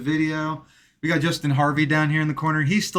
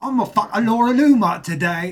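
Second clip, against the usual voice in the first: fake British accent, much higher and louder; 6 semitones higher, 5 dB louder than usual. In a joking bit about the exiled Proud Boy, doing the British Matt voice. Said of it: "doing British".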